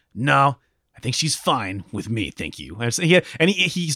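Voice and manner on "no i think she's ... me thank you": polished action-hero style line delivery. Retelling a game scene, quoting Leon meeting Salazar: Leon action guy voice. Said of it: "delivering it with a really good action guy quality".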